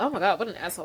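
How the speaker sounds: put-on unbothered tone. Retelling how a character reacted to news: imitating someone unbothered. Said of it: "didn't give a fuck".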